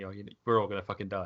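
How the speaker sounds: talking while laughing, imitated. Retelling how he laughed at people while passing the hallow around, imitating laughing while talking. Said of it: "sort of laughing at them and saying".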